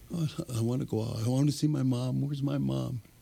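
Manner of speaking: put-on high little-kid voice. Retelling how a man with a head injury started talking, like a little kid. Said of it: "he started talking like a little kid".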